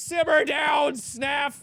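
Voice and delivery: high, shouted callout. During a team shooter match, a player yells at a teammate. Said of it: "Why are we yelling?".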